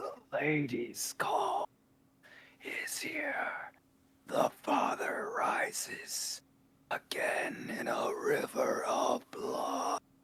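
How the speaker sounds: very hushed, slow, drawn-out rasping whisper. Retelling what she said in the story, in a raspy voice. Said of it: "like almost like in a raspy voice".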